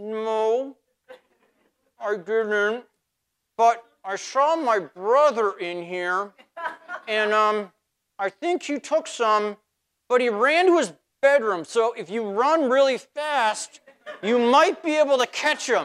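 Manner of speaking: mock mumbling with mouth full. Speaker acting out someone caught with cookies, imitating mumbling with mouth full. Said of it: "their mouth is so full, they can't even speak. So they kind of mumble".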